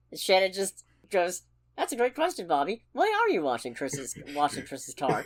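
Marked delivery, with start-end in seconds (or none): 1.8-5.3 mock sweet, innocent-sounding, smug sing-song tone. Retelling a movie character's question to Bobby: imitating Shannon's smug innocent tone. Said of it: "she's phrasing it innocuously".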